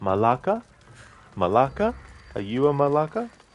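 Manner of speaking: malaka said with rising, question-like intonation. Mimicking a game character saying Malaka as if asking a question. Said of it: "like he was asking a question with the word".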